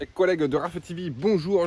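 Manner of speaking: put-on Marseillais accent. Greeting viewers at the start of a new video, put-on Marseille accent. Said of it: "je prends toujours un accent marseillais pour les intros".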